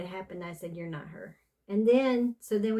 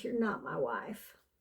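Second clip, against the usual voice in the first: grief-stricken, sorrowful, full of emotion; 4 semitones lower, 6 dB quieter than usual. Retelling what the dad said to the mom: imitating sorrowful speech. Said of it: "he said it with such emotion, like sorrow".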